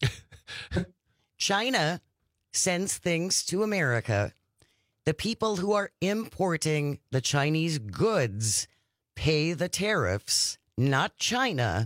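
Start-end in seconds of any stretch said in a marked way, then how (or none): 1.4-11.9 very slow, deliberate, one piece at a time. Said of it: "I just wanna say this real slowly".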